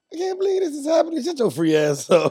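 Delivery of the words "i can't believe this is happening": very high, rushed fake sobbing. Retelling how she acted after they were taken in, imitating her fake crying. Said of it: "She was all fake crying".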